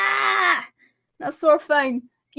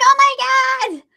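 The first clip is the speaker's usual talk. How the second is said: put-on screaming, higher; 7 semitones higher than usual. Retelling how noisy neighbours screamed before the stream: imitating people screaming. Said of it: "they were screaming a few minutes before".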